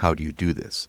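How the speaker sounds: ordinary talk, nothing marked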